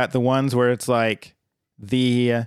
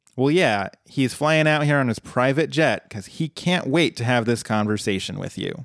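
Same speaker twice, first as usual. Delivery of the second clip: normal talking voice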